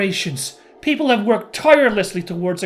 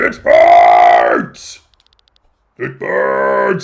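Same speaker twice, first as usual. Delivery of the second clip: bad creature voice, deep, slow, drawn-out, loud, rough; 8 dB louder than usual. Voicing the Vein in the story, bad Vein voice. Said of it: "I'm not doing a very good voice for the vein".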